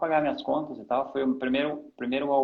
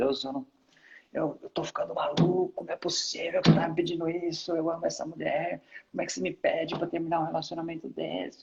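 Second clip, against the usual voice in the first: play-acted, high, tearful, desperate crying in despair; 5 semitones higher than usual. Recounting breaking up with Rebeca and praying to God in the car, retelling a crying prayer. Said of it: "entrei no carro chorando e falava para Deus".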